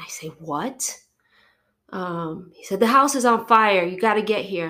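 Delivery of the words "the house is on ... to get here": all-out scream at full, very loud volume. Retelling a phone call about your house fire, imitating the caller screaming. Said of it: "he's screaming".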